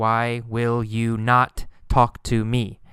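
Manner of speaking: ordinary talk, nothing marked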